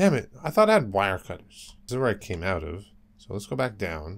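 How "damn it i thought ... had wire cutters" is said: plain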